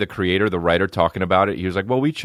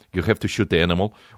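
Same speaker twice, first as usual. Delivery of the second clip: put-on, fake Russian accent. Complaining about a documentary's russian accents, quoting a character, put-on russian accent. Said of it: "they put Russian accent".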